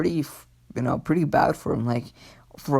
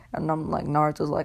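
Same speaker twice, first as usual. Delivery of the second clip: ordinary delivery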